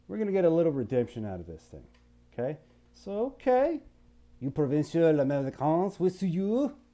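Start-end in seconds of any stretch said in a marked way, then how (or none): 4.4-6.7 bad, deliberately put-on French accent. Addressing provincial Americans in character: bad French accent. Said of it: "That's my bad French accent right there".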